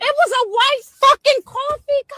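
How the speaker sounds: shrill, very high-pitched scream. Asked to allow a car search over a suspected drug deal, screaming. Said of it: "Why are you screaming?".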